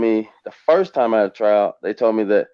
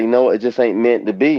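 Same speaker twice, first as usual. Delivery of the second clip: ordinary delivery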